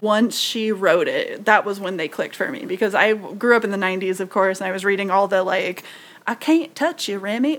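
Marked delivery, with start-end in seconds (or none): 6.3-7.6 put-on, not-quite-real Cajun accent. Recalling comics she read growing up in the 90s, in a fake cajun accent. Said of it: "I love you both doing the accent".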